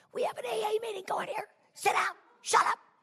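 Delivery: play-acted, very high-pitched screaming. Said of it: "behind the podium screaming".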